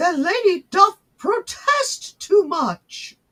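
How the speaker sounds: very high, slow, proper Victorian accent. Admitting being trash at accents, then showing off a proper Victorian accent. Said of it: "my proper Victorian accent".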